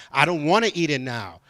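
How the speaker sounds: plain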